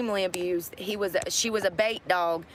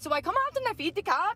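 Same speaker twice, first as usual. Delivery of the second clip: amateur put-on Irish accent, pitched very high; 12 semitones higher than usual. Retelling meeting a woman from Ireland, the speaker quotes her imitating an Irish accent. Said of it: "I'm not good at an Irish accent".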